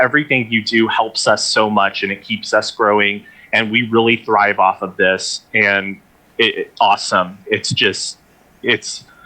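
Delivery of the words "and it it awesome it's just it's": choked up, fighting tears, words stumbling. Thanking everyone who made the virtual event possible, holding back tears. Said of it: "I'm trying not to cry".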